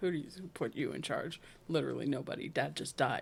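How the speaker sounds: put-on exasperated tone. Retelling how the youngest sister turned on the oldest brother, mock-exasperated. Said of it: "rolls her eyes at him like".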